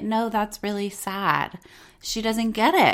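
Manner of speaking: ordinary talk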